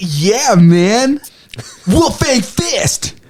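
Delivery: upbeat surfer-dude voice, very slow, stretched out. Speaker demonstrates a favorite character voice: upbeat surfer-dude Yamcha voice. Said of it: "it's like it has this really like upbeat".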